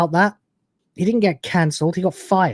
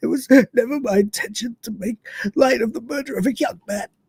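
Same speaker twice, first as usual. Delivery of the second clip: mock tearful, choked-up voice, cracking, pitched up; 5 semitones higher, 3 dB quieter than usual. Quoting a man's apology to listeners, mock-tearful, voice cracking. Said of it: "with tears and his voice cracking up".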